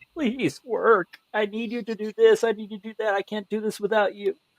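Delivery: put-on, high-pitched, near-tears, tearful pleading tone. Retelling how you beg your technology to work, tearful pleading. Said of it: "sometimes I'll even get to the point of tears".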